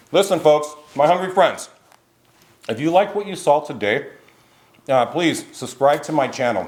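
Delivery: talking with a mouthful. Asking viewers to subscribe while tasting the dish, talking with a mouthful. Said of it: "I'm talking with a mouthful".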